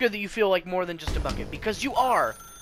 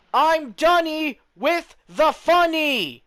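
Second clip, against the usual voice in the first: loudest possible scream, very high and very drawn out; 10 semitones higher, 6 dB louder than usual. Told to practice screaming in your loudest possible voice: screaming at loudest volume. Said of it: "in your loudest possible voice ... practice screaming".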